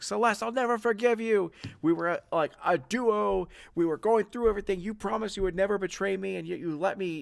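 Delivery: crying while shouting angrily. Voicing a gangster who fires back at a former friend: crying while shouting in anger. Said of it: "she's, like, crying as she's firing".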